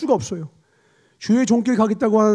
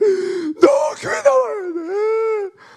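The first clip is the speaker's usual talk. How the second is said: put-on tearful, pleading, crying voice, pitched higher; 12 semitones higher than usual. Retelling begging a friend to believe, imitating own past crying. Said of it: "또 울었어요".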